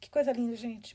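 touched, moved, emotional, choked-up voice. Pausing the reading to comment, moved and emotional. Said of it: "eu fico emocionada".

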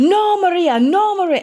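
weak put-on Spanish accent, very high pitch. Retelling a brother reacting to a slap between kids, in a not-so-good Spanish accent. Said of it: "my Spanish accent is not really good".

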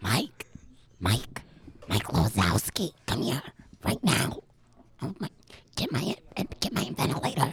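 put-on very old, chain-smoking old woman voice. Told to play a 98-year-old grandma who smoked fifty years: 98-year-old smoker grandma voice. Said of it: "you're a 98-year-old grandma that smoked cigarettes for 50 years".

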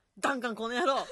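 put-on angry gruff voice. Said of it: "ビートたけしさんのモノマネをしながら怒ってください".

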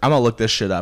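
put-on heated, worked-up, angry, resolute tone. Retelling what a friend said at work: imitating a heated friend. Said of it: "she was so heated at work one day".

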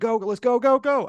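shrill, high yelling, slow and stretched out. Describing a movie bit where a man shouts at a red van, retelling a shout. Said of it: "there's a red van and he shouts".

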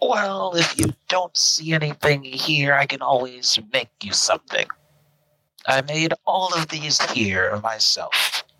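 put-on high elf voice. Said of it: "but a type of elf that you have never seen before. He has rows of bracelets and necklaces".

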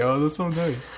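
fake-nice sarcastic tone. Speaker checks with others whether this is their sarcastic voice: sarcastic voice. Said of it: "Is that my sarcastic voice when I say".

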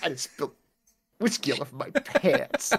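hushed, muttered whisper under the breath. Talking about a soundbite of themselves, the speaker repeats it; imitating own whisper. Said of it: "It just sounds like I'm like just like whispering".

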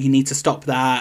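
ordinary delivery

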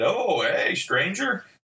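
playful, teasing, jokey, high-pitched voice. Recalling a phone call with a friend after a long silence, retelling a joking greeting. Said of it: "he jokingly said".

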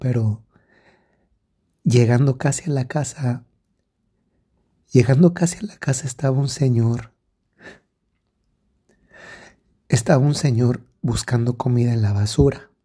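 choked-up voice catching with emotion. Telling of a man searching the trash for food: getting emotional. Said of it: "perdón que me estoy emocionando".

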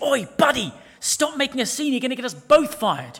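loud, high hissed. Telling a story, the lion pins a man down and hisses at him. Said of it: "and hissed".

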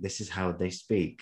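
plain

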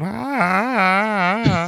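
long, held, very high ah. Recalling a mannequin stunt scene: Tommy Lee Jones impression. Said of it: "your best Tommy Lee Jones impression ever".

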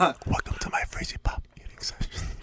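soft, hushed ASMR whisper. Opening an eating session for viewers, in an ASMR voice. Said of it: "that's enough ASMR".

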